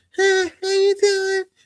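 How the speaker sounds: put-on sweet girl voice, very high-pitched. Describing the sweet girls from Long Island, imitating a sweet girl's voice. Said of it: "That voice".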